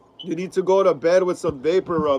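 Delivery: plain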